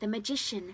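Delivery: ordinary delivery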